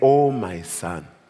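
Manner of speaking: meek, falsely humble, put-on humble tone. Retelling how Saul now addresses David: imitating Saul sounding falsely humble. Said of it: "he's trying to be humble".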